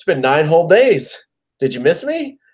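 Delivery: mock teasing, sarcastic tone. Retelling what the coach said to the media: imitating a sarcastic, smiling coach. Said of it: "You could tell he was gonna say something sarcastic".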